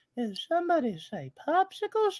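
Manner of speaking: very high, swooping, sing-song cartoon voice. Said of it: "That's not the only Family Guy voice".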